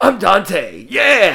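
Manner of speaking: horrible, loud put-on voice, pitch swinging wildly. Picturing a live action casting, doing a horrible Nicolas Cage impression. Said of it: "why that's my impression".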